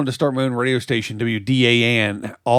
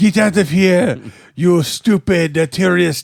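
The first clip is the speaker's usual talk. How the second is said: put-on terrible French accent, higher pitch; 7 semitones higher than usual. Voicing cows on a beach telling people off: terrible French accent. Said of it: "terrible, terrible French accent you've got going".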